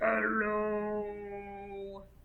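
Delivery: as low and deep as possible, soft.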